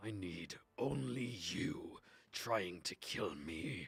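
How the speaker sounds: low, slow, warped, distorted creature voice. Voicing a Volstrucker in its adapted form: distorted Volstrucker voice. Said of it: "the distorted voice of this Volstrucker".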